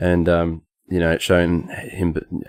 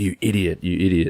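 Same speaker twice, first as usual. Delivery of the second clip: put-on whispered muttering; 4 dB quieter than usual. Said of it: "he's kinda whispering to himself".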